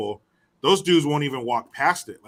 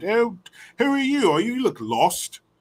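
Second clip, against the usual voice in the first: put-on British accent, higher; 8 semitones higher than usual. Describing a film character who has a british accent, then quoting him: imitating a british accent. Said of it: "He has a British accent".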